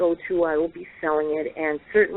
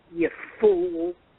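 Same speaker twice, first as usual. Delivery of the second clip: mock disgusted, insulting tone. Retelling what a spirit's voice said, imitating a disgusted voice. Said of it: "Like he was just so disgusted".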